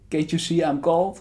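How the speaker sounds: mock French accent with rising pitch.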